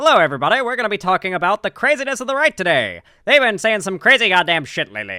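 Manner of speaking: put-on high, swooping, old-timey 1920s radio announcer voice. Streamer tries out a voice for all their streams: 1920s radio announcer voice. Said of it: "Should I do like a nineteen twenties radio voice".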